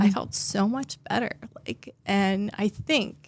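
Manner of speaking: with feeling, emotional. A therapist telling the host how yoga made her feel, getting emotional. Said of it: "I'm sorry I'm getting emotional".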